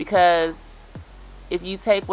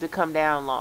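ordinary talk, nothing marked

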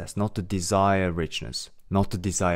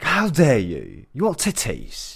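put-on exaggerated British accent, higher, louder; 4 semitones higher, 4 dB louder than usual. Acting out someone judging a baby for wanting to feed, in an over-the-top british accent. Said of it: "I went a little bit too extra in the British accent".

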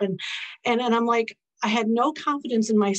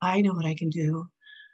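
put-on, joking sultry voice, much lower; 5 semitones lower than usual. Repeating a line jokingly said to him, in a very sultry voice. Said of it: "jokingly said in a very sultry voice".

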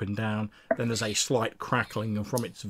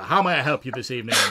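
robot droid voice, louder; 3 semitones higher, 6 dB louder than usual. Voicing a station droid greeting a player: station droid voice. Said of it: "it turns and looks at you and says".

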